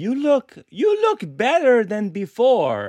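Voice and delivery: rough attempt, high, swooping Eastern European accent. Retelling what the speaker's facialist said during a facial: imitating facialist's eastern european accent. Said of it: "she's got sort of an Eastern European accent".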